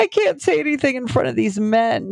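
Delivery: high-pitched, tearful, weeping, crying voice. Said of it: "the harder I cry".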